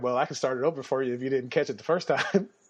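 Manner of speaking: plain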